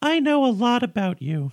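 very high, squeaky cartoon voice. Playing a character in a scene, speaking in a Mickey Mouse-like voice. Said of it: "Still kind of Mickey Mouse".

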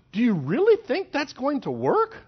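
amused disbelieving laugh. Retelling a reply to kids with a foolish plan: laughing in disbelief. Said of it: "sometimes you just have to laugh and go".

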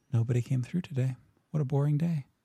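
hushed, whispered voice. Narrating a scene where one of two women whispers to the others, whispering. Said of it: "and then one of them whispers".

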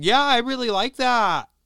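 put-on high loud valley-girl voice. Imitating how Oscar really talks behind his public facade: Oscar as a valley girl. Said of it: "like a valley girl".

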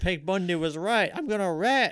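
put-on high-pitched screaming, sounding unhinged. Retelling how a woman threatened to rat: retelling a woman yelling. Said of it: "she starts fucking yelling it".

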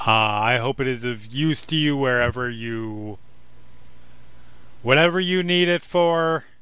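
grand voice, rising pitch. Voicing a celestial being in a roleplaying game; giant booming voice. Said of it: "now it's this giant booming voice".

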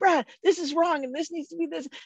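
put-on thrilled rush of words. Reminding Brad of running into his office after finding a mistake: retelling an excited outburst. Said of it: "I was so excited".

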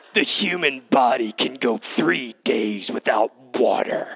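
very low, gruff, growling voice. Retelling what a Navy SEAL likes to say, gruff Jocko Willink voice. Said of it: "he has this gruff voice".

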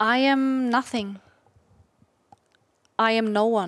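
unhurried, slow, drawn-out delivery. Asked by the host to repeat a phrase in a slow voice. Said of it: "But in your slow voice".

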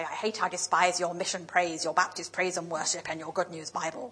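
very scary, menacing, ominous preaching tone. Speaker quotes his college tutor's version of God's words, imitating his scary voice. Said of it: "in his very scary voice".

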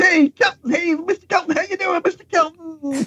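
high, friendly, chummy voice, called out. Retelling Jay Leno calling out from a flatbed truck: Jay Leno impression. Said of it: "That's not a bad impression you got".

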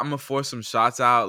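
ordinary talk, nothing marked

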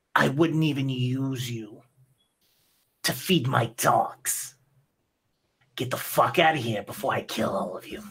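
furious, angry, growling snarl. Voicing a dwarf who dodges an axe and threatens the party: angry growling voice. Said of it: "you can hear his voice grustling as he gets angry".

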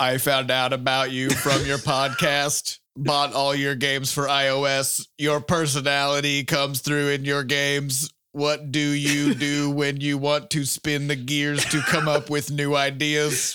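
put-on flat monotone robot voice, words drawn out. Reading a listener's question aloud on a podcast, in a robot voice. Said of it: "Your commitment to the Robo voice".

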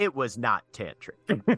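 storybook narrator-style delivery. Adding a narrator's note to the conversation, in a narrator voice. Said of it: "Narrator voice".

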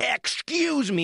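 very high, shrill, scolding yell. Retelling a woman from behind the bar confronting the speaker, retelling a woman yelling. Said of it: "like yelling at me".

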